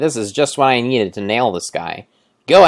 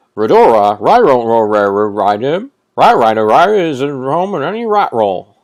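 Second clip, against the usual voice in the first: loud, barking cartoon dog voice; 5 dB louder than usual. Voicing a game character who looks like a dog: Scooby-Doo voice. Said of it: "I'm trying to do a Scooby-Doo voice".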